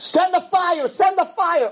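put-on shrill, very high screeching plea. Telling the Eliyahu story, acting out the Baal prophets imitating people screaming. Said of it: "the Nevi'i Baal was screaming".

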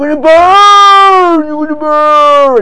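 enthused preacher, very high, very loud, shrill. Contrasting the Torah's view with a preacher on punishment: enthused preacher voice. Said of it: "the voice of a enthused preacher".

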